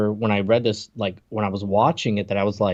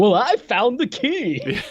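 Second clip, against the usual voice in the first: mock, weirdly excited, very high, swooping, sing-song voice; 12 semitones higher than usual. Retelling what he says after Quinn's question, a weirdly excited line. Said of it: "he says in a really weirdly excited tone of voice".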